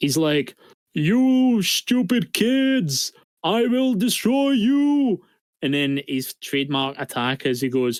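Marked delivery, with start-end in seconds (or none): 0.9-5.2 silly, squeaky very high voice, every word drawn out. Imitating a cartoon villain to the others: imitating Metal Seedramon's silly voice. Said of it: "because of his silly voice".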